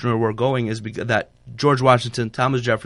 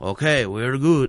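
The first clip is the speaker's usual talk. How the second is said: put-on French accent. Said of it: "I gotta stop doing this accent".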